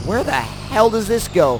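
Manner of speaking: ordinary talk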